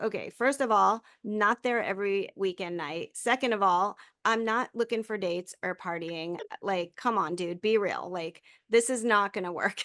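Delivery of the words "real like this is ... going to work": ordinary talk, nothing marked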